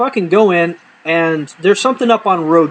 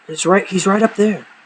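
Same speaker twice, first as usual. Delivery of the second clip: put-on hushed, low voice; 2 semitones higher than usual. Retelling telling a trainer someone sleeps up in row G: imitating speaking in a low voice. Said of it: "I'm trying to keep my voice low".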